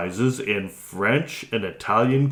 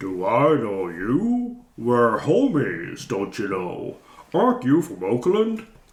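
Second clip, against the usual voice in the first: chuckling, amused, "you" rising and long drawn. Narrator reads his answer to someone asking if they've met: deep chuckling voice. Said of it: "He chuckled in a deep voice and said".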